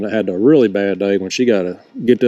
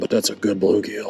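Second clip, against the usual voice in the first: low voice, much quieter; 6 dB quieter than usual. Landing another bluegill while fishing, talking real low. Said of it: "I don't know why I'm talking real low right now".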